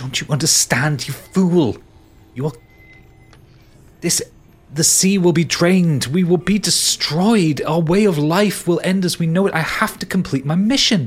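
enraged voice turning pleading. Narrating a pirate story, the woman confronts the pirate who took her necklace, enraged. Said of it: "you can see kind of the rage building up in her".

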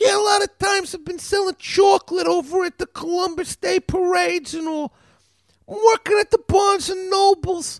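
very high, put-on character voice. Imitating a man from Brooklyn just for fun: put-on high voice. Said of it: "I just like talking with the high voice".

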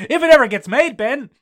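put-on exasperated yell.

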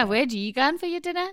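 put-on Geordie fishwife accent and voice. Trying out a scumbag's line in a comedy bit, Geordie fishwife accent. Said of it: "you said it like a Geordie Fishwife".

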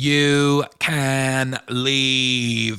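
very slow and cold, every word drawn out.

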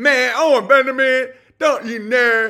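loud dumb street voice. Mocking a critic's way of talking: mocking Barricade Garage impression. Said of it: "he sounds like a stupid street idiot".

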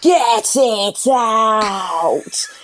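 straining crying out. Recalling Rob offering chicken during labor, the speaker retells shouting mid-contraction. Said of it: "I'm having a contraction going".

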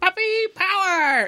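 very high-pitched exclamation. Showing another speaker how the cartoon puppy should have sounded: Scrappy-Doo voice. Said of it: "exactly how you should have sounded".

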